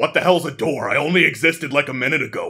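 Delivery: dragon character voice. Answering a player who asks the dragon about a door: dragon voice. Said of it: "you ask the dragon, and he's like".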